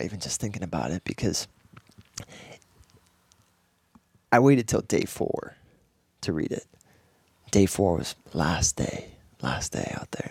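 teary, welling-up voice on the edge of tears. Recalling saving a love note until the last day: tearing up. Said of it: "It makes me tear up right now".

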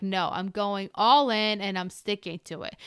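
ordinary delivery

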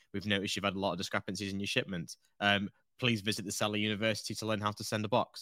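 ordinary delivery

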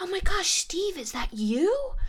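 put-on, very high, swooping yell. Retelling a woman on the bus calling to a man: imitating a woman yelling. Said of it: "yelling to him".

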